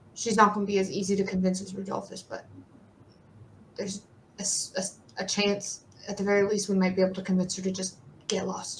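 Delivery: hushed, very quiet, barely audible half-whisper. A character half-whispers back to a player who messaged him, very quiet half-whisper. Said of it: "it's a very quiet whisper back to you".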